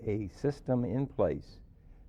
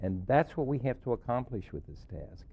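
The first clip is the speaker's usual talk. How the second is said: ordinary talk, nothing marked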